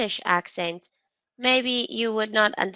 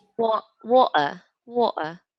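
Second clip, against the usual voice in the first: put-on British accent with British English pronunciation. Trying out how water is said in British English, in a British accent. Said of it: "what is water in British English?".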